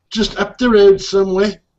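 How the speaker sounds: poor put-on English accent. Replying to a friend in a group conversation, bad English accent. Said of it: "That was a bad accent".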